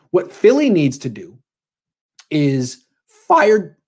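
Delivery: voice cracking mid-word on "fire". Arguing what Philly needs to do when your voice cracks: voice cracking. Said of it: "my voice cracked".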